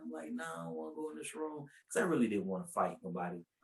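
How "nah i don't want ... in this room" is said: tearful crying voice, pitched up. Retelling refusing an aunt's order to get in the room: imitating own past crying. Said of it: "And I'm crying".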